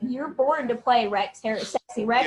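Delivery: ordinary talk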